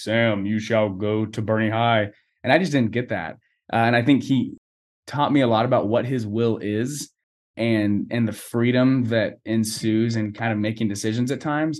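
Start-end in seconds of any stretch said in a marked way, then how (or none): 0.0-2.1 drops deep, decree-like authoritative delivery. Speaker imagines God speaking to him in a dream: deep voice of God. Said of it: "a deep voice be like".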